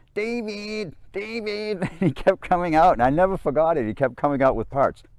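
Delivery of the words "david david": high-pitched nasal voice, calling out. Retelling a guy calling a friend from his basement, nasally voice. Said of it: "he had this nasally voice".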